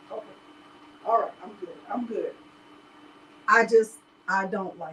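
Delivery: voice holding back tears. Pulling themself together after getting emotional, holding back tears. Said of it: "I'm trying not to get emotional".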